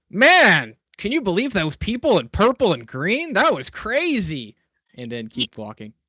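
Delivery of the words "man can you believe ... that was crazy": booming, very loud, very high, projected. Walking down the street near the paladins, a character says to Thistle, very loud. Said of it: "And very loudly".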